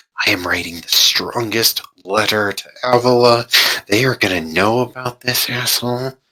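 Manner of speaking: muttered quietly under breath. A game master voices a character muttering within the players' hearing, muttered under her breath. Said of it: "You can hear her under her breath".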